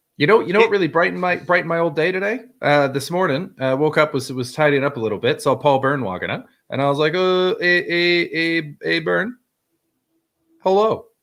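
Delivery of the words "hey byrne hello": acted yell, much higher, slower. Retelling yelling hello out the window at someone walking up, retelling a yell. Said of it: "I just yelled it out the window".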